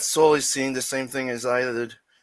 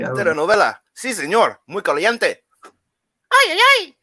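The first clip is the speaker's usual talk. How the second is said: high, hammed-up mock Mexican accent. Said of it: "when I do my Mexican accent".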